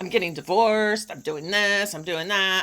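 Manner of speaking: snooty, defensive, impatient, dismissive tone. Retelling own answer to family asking what she's been doing: imitating own impatient, snobby tone. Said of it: "in a really, um, impatient, snobby sort of way".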